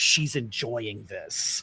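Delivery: low, horror-struck whisper. Describing a kids' show, acting out a character speaking into a communicator, imitating a horrified whisper. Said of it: "whispers really horrified".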